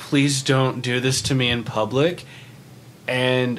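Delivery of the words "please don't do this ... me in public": ordinary talk, nothing marked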